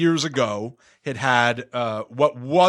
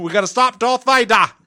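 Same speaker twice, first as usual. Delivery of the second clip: loud, high-pitched put-on Australian accent; 9 semitones higher, 6 dB louder than usual. Imagining an Australian dub of Star Wars: put-on Australian accent. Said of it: "the Australian cut of".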